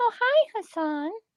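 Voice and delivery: put-on, very high, girly voice. Hearing that Hassan said hello, the speaker answers in a mocking girly voice. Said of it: "You hear how her voice went up like three octaves?".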